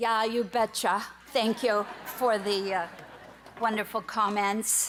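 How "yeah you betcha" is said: put-on Minnesota accent. Accepting an award after a remark on the accent: Minnesota accent. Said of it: "in her little cute Minnesota accent".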